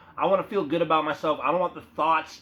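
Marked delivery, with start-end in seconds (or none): none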